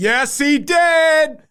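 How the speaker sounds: very high shouted voice with did drawn out. Retelling interrupting speakers from a back corner, retelling a shouted retort. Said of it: "I literally shouted out".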